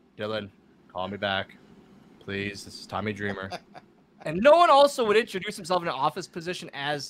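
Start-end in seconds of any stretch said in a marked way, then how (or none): 0.2-3.5 very low, droning, flat monotone. Retelling a voicemail from a caller, in a flat monotone voicemail voice. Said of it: "no one talks in such a monotone voice".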